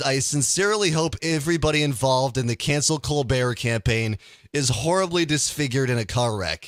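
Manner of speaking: ordinary delivery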